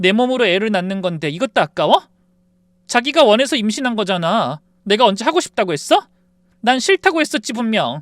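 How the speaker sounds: mock furious screaming, loud, high and rising. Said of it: "갑자기 소리를 질렀어요".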